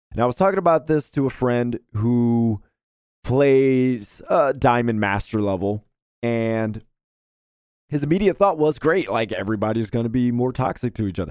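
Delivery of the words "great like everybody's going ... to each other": ordinary delivery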